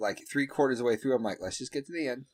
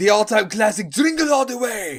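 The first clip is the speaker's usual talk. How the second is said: clumsy, higher-pitched, put-on bad Austrian accent; 9 semitones higher, 9 dB louder than usual. Plugging an Arnold movie title, doing a bad Arnold Schwarzenegger impression. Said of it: "I know that was a bad Arnold impersonation that I just did".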